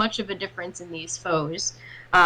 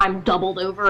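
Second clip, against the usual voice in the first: ordinary talk, nothing marked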